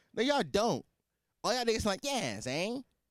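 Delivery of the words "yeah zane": natural, unforced, soft, plain everyday voice. Mocking New Yorkers pretending to have deep voices, imitating how they really sound. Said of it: "That's what y'all sound like".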